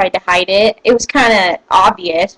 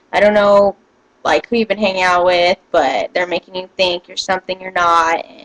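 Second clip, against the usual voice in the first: ordinary talk, nothing marked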